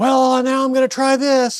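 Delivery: very high, loud, drawn-out shout. Retelling talking over a running diesel truck in an old video: retelling own past yelling. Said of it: "I'm yelling".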